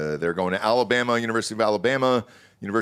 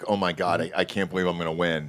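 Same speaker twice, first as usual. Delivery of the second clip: put-on nervous voice, lower; 3 semitones lower than usual. Imitating a golfer who gets nervous when ahead: imitating Tommy, nervous. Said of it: "he's just so nervous".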